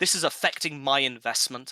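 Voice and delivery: ordinary talk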